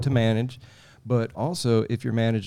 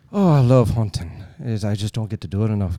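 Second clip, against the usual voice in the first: put-on Irish accent, much louder; 6 dB louder than usual. Retelling what a man said while they sat together, in an irish accent impression. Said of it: "Your Irish impression is very impressive".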